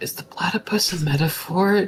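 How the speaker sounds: stage-whispered aside. Whispering a question to Prod about the platypus: whispering. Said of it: "Just gonna whisper to".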